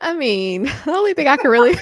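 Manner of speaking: suppressing a laugh while speaking. Answering a question about positive takeaways, holding back laughter. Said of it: "I'm trying so hard not to laugh".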